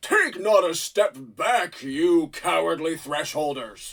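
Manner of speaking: great booming, thundering knight voice. A knight on the Glyptodon addresses the thresholders, great booming knight voice. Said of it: "you hear a great booming voice".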